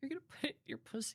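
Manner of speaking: sad, hushed, breathy near-whisper. Asked to say a line in different emotions, speaker does it sad; sad delivery.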